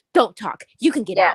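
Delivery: mock disrespectful talk. Imitating men who talk to women: imitating rude, disrespectful talk. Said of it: "you talk to them disrespectfully and rude".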